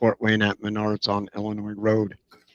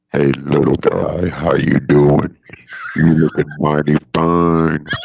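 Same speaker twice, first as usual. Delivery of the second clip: put-on sexy man voice, lower and louder; 7 semitones lower, 5 dB louder than usual.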